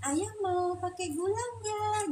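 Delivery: tender, sweet, soft, gentle, slow and high. Demonstrating how a wife speaks gently to her husband: soft, gentle voice. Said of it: "sekarang Umi niru. Nuri, cara ngomongnya lembut loh".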